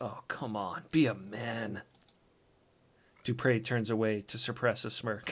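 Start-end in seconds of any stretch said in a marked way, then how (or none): 0.0-1.8 slow, drawn-out, hushed half-whisper. Reading a scene, a companion answers the tough pirate's grief, half-whispering. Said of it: "Spark whispers".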